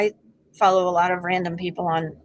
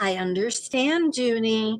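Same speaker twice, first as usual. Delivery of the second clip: mock condescending tone, higher pitch; 3 semitones higher than usual. Retelling how the AI assistant cuts in: imitating a condescending AI assistant. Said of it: "Mine is constantly condescending me".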